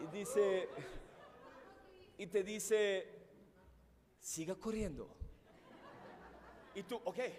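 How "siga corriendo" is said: tiny, soft little voice from the side. Describing running a long race when a little voice speaks up: Luis's little voice. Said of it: "viene una vocecita de Luis y dice".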